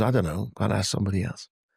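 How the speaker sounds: plain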